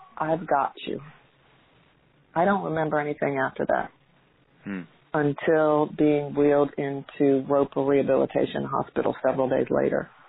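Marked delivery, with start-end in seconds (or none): 0.2-1.0 soft whisper. Retelling what he whispered in the speaker's ear, retelling a whisper. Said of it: "he whispered in my ear".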